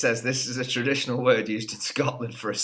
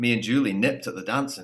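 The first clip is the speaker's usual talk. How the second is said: attempted Scottish accent. Giving a listener a sentence to guess, say it in a scottish accent. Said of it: "I'll try and do the Scottish accent".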